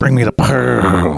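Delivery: slow, gurgly water-in-mouth voice, pearl stretched out. Imitating a cartoon henchman who always talked with water in his mouth. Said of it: "he always talked like he had water in his mouth".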